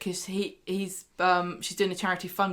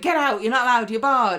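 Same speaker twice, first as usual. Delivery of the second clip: snappy, high, loud, yappy little chihuahua barking; 5 semitones higher, 8 dB louder than usual. Speaker recaps a scene of Jenny ordering Christina out: imitating yappy chihuahua barking. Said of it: "like a little chihuahua barking at her".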